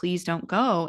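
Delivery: mock tearful, crying, begging voice. Retelling own past words from early marriage, retelling a crying plea. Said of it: "it's like crying, begging".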